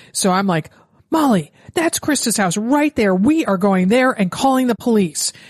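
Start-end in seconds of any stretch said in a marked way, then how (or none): 1.1-5.3 firm, decisive, emphatic calling voice. Retelling loudly telling a running friend to go call the police: retelling saying it really loudly. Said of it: "I said really loudly".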